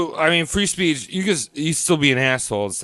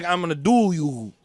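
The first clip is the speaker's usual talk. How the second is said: put-on Russian-style Slavic accent; 3 semitones higher than usual. Acting out a squatting Slav: put-on Slavic accent. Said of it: "Imagine a fucking guy Slav squatting".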